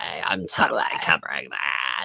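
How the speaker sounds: slow, dragged-out, creaky vocal-fry drawl. Imitating a reporter reacting to a story: Kat Tenbarge vocal fry impression. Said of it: "she has the best vocal fry ever".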